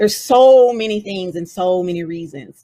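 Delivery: ordinary delivery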